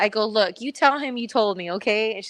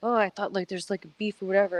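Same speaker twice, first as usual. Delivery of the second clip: put-on mumble under breath, quieter; 5 dB quieter than usual. Retelling what someone said at a seminar: imitating someone muttering under breath. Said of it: "under his breath was like".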